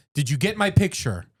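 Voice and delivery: play-acted, high, blunt, plain matter-of-fact tone. Retelling a video of an old man at the DMV: imitating a loud, matter-of-fact man. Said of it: "He's very matter of fact".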